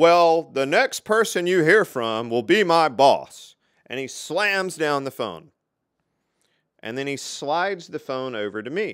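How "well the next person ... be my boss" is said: very loud, booming voice. Recounting a shared work room, the speaker quotes an engineer on the phone, imitating an engineer's loud remark. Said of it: "says really, really loudly".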